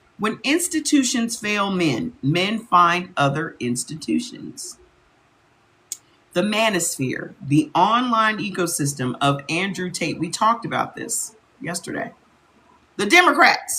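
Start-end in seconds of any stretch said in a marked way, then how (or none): 13.0-13.8 high, sudden shouted yell. Reading out a list of topics, yelling. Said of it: "Why are you yelling".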